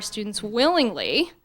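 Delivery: "willingly" stressed and slowed. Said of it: "emphasis on willingly".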